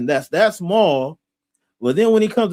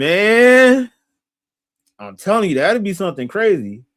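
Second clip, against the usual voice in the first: talking through laughter, drawn out. Chatting with someone he calls bro, laughing.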